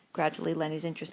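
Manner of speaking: plain reading voice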